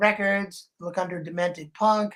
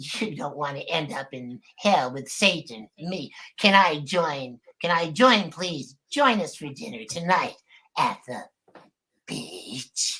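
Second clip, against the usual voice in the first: low, devilish, put-on demon voice; 5 semitones lower than usual. Speaker offers to do a few voices and performs a devil voice. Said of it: "How about my devil's voice?".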